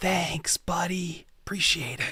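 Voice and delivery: soft, right-in-the-ear murmur. Narrating a game scene, Roland walks over and thanks the player: Roland, close to your ear. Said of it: "he kind of very close to your ear says".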